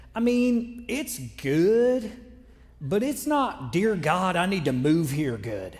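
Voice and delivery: slow, deep South Carolina drawl, "good" stretched. Retell a man's response about the restaurants in St. Louis, in his deep South Carolinian accent. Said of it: "in his nice, deep South Carolinian accent".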